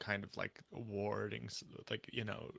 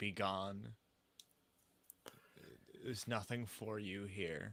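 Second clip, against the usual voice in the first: voice full of pain, obvious hurt. In a role-play game, a player's character speaks to someone approaching, pain in the voice. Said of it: "With obvious pain in my voice".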